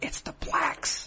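voice dropped to a hushed whisper. Imitating a woman who whispered part of her sentence: whispered word "blacks". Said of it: "she would whisper for that part of the sentence".

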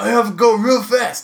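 very high-pitched squeaky voice. Retelling a drive behind a speeding truck: imitating the truck driver. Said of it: "He's like".

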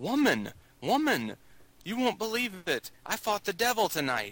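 mock high-pitched, hollered call. Retelling a film scene, a ninja hollers to his woman down a dark street: retelling a hollered line. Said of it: "and he's hollering".

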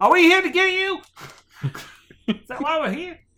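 loud, very high-pitched shout. Playing a character in a scene with a bartender, shouting down from the stairs. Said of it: "I shout down from the stairs".

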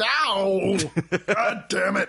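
silly puppet voice, "ow" stretched out. A character under the bed gets hit by the slammed lid: Muppet-like voice. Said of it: "He sounds like a Muppet".

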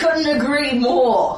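annoyed, fed-up retort. Player answering a foe who yells that this must end: pissed-off tone. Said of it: "Caitlin says in a pissed tone of voice".

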